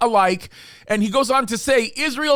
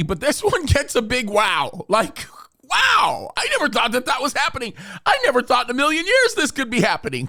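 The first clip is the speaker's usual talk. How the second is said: exaggerated mock amazement, swooping and sing-song. Introducing a headline about to be read aloud: sarcastic. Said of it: "I know I'm saying this sarcastically".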